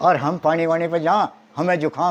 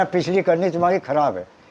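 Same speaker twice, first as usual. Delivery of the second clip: ordinary talk, nothing marked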